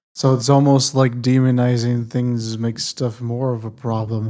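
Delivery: very sarcastic, loud enough to carry far.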